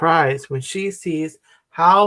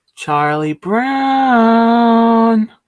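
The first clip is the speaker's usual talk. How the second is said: lilting singsong, higher and louder; 6 semitones higher, 5 dB louder than usual. Reading a story aloud, a character calls out a name: sing-song voice. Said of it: "calls Lucy in a sing-song voice".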